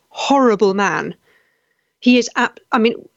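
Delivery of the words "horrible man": normal talking voice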